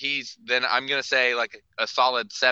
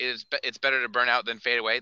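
normal talking voice

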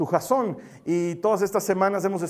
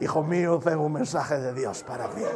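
put-on intoned like an old-fashioned solemn recitation; 4 semitones lower, 3 dB quieter than usual. Imagining an angel delivering a message from God, in Reina-Valera 1960 Bible voice. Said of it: "te diga con voz de Reina Valera".

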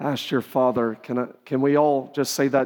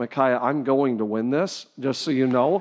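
ordinary talk, nothing marked

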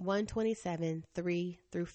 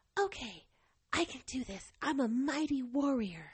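put-on sweet, cute little baby voice, pitched up; 7 semitones higher than usual. Retelling what she said to herself in a moment of resolve, in a cute little baby voice. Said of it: "her cute little baby voice".

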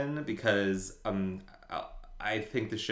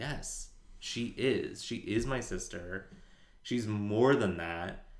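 ordinary delivery

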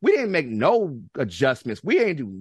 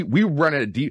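usual speaking voice

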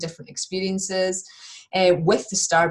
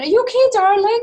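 very high, loud, raised calling shout; 7 dB louder than usual. Retelling calling out to the husband downstairs: imitating own shout. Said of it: "so I'm shouting".

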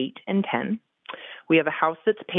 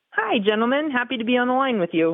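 bright, chipper, cheerful, very high-pitched voice; 9 semitones higher than usual. A caller greets the show's hosts, chipper. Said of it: "you sound you nice know, and thank chipper".

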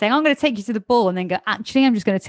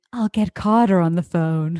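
put-on evil grandmother voice, lower; 3 semitones lower than usual. Retelling a scene from the show, imitating evil Cece. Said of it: "evil Cece grandmother going".

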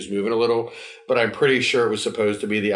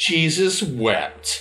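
play-acted heavy, biting sarcasm, high-pitched; 7 semitones higher than usual. Recounting how she answers his crucifixion jokes: retelling a super sarcastic line. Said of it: "super sarcastically".

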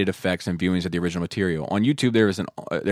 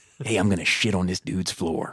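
put-on Eastern Shore accent, movie-star style. Act out the prankster calling Bobby in the bedroom, in a Jack Nicholson voice, Eastern Shore version. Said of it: "like the Eastern Shore version".

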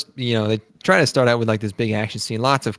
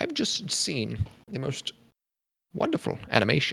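soft, airy, breathy put-on voice, hushed; 4 semitones higher, 9 dB quieter than usual. Imitating Varg reacting to the anime trailer: Varg impression. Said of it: "my impression of him".

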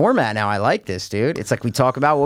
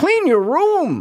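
put-on Canadian voice, higher pitched; 14 semitones higher than usual. Imitating a guy from a podcast: Jordan Peterson voice. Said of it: "We were doing his voice".

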